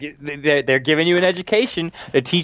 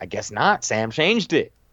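quiet, hushed half-whisper; 4 semitones lower than usual. Retelling a scene where a wrestler half-whispers back: imitating someone half-whispering back. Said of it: "she whispers back".

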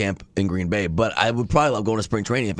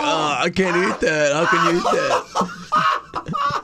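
mock very drawn-out, slow, swooping, high tearful wail; 8 semitones higher than usual. Retelling how Josh complained about meat every day: imitating Josh crying. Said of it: "Josh came in every day crying".

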